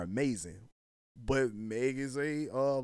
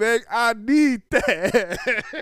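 very high, very loud, very slow, drawn-out near-sob wail; 10 semitones higher, 11 dB louder than usual. Retelling what a man said in a video: imitating someone about to cry. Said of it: "he sound like bro was finna cry".

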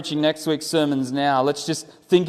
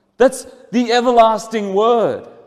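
normal talking voice

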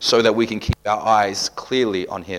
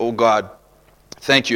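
plain

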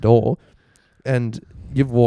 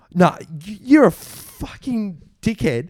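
full-on high, drawn-out, furious yelling; 8 semitones higher than usual. Retelling a friend's angry phone call: imitating someone yelling. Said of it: "full on yelling at me".

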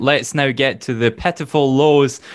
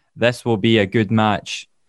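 mock-deadpan delivery, much lower pitch; 3 semitones lower than usual. Recapping a match, quoting a line said before it, retelling it deadpan. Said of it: "saying absolutely deadpan".

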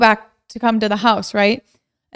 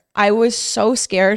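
usual speaking voice

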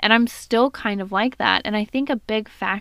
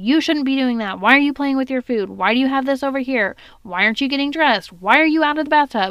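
acted-out fast, rattled-off scolding yell; 4 semitones higher than usual. A parent acts out how they yell at their daughter; acting out yelling at daughter. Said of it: "I'm yelling at her".

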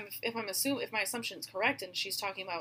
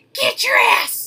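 mock prison-guard yell, higher and louder; 14 dB louder than usual. Imagining how she would sound in prison: imitating her yelling. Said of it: "That's probably what she would sound like".

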